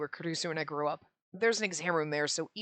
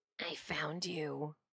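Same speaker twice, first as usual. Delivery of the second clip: soft, rasping, raspy, nasty, unpleasant voice; 8 dB quieter than usual. Reading a story aloud, a girl speaks to the narrator; raspy, unpleasant voice. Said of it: "in a raspy, unpleasant voice, she spoke".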